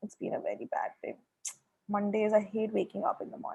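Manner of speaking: very quiet, breathy, sad, sorrowful hushed whisper. Explaining intonation, the speaker demonstrates how a sad person talks, in a sad voice. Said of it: "But if you're sad, you say".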